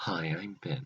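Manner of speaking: hushed whisper. Ben starting his episode recap while his mom sleeps next door, whispering. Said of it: "I has to whisper".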